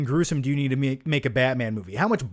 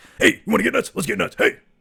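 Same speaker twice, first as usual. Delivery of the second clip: high, creaky, rough-edged voice; 7 semitones higher than usual. Doing a Beetlejuice impression mixed with a Batman 1989 quote. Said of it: "I did a Beetlejuice impression meets Batman nineteen eighty-nine".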